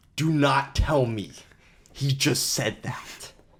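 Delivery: very slow, every single word heavily stressed. Retelling a wrestling clip where Booker T turns and reacts: imitating Booker T shouting every word. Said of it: "pronounces, like, every word like he's, like, like, shouting it".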